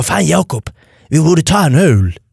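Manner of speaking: put-on slow Scanian accent, southern Swedish Skåne dialect. Retelling what Robin Paulsson said one evening, Robin Paulsson in Scanian accent. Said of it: "Jättebra skånska".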